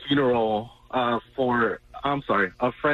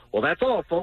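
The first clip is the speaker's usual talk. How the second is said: blurted out nervously in a cartoon-style voice; 4 semitones higher than usual. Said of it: "So I nervously yelled out".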